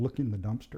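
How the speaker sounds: ordinary talk, nothing marked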